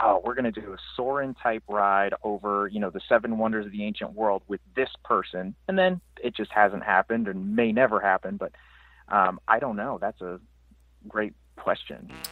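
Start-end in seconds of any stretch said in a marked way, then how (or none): none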